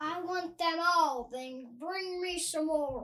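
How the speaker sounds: talking the way a whale would. Pandas offer a donut in a made-up story; the answer comes in whale voice. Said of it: "That's the voice of a whale".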